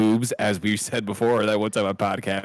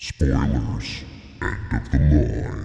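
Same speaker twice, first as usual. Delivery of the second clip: very deep, very low monster creature voice; 9 semitones lower than usual. Podcast host announcing the spoilers segment, in a spoiler monster voice. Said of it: "I did a spoiler monster voice".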